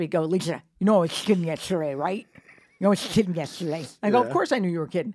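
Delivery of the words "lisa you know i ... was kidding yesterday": imitated lisp, louder and slower. Recalling the comic at the club the next night, the speaker does a Rich Voss lisp impression. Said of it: "he has that cute little lovable lisp".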